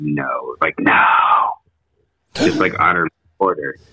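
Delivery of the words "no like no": mock aggressive harsh whisper, much slower. Recounting an investigation, acting out the reply they got: retelling an aggressive whisper. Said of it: "a really aggressive, like, whisper".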